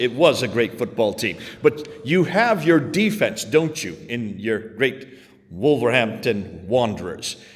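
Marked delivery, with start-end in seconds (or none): 0.0-1.4 WAS stressed hard with a falling tune. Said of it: "I'm assuming it's a".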